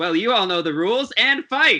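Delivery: high ringside arena announcer voice. Voicing the announcer who starts the arena match: arena announcer voice. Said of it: "the announcer goes".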